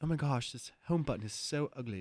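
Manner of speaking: bad imitation with complaining tone. Imitating someone looking at his phone: bad impression of him. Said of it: "I don't do a very good impression".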